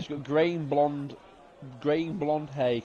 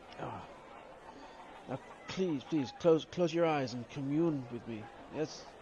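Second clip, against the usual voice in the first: bad, fake Eastern European mystic accent; 6 dB quieter than usual. Playing a character in a scene with another performer, in a terrible Eastern European accent. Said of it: "I'm gonna attempt a, a terrible uh, Eastern European accent".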